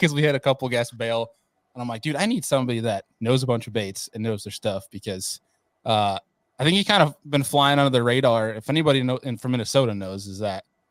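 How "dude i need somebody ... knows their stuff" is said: normal talking voice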